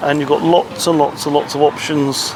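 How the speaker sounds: ordinary delivery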